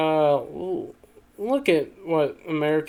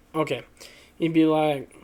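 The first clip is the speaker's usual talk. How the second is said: ordinary talk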